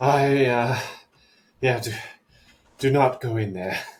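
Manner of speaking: put-on panting, out of breath. Recounting bursting out, bent over, hands on knees: acting out panting. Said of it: "like I'm panting, bent over".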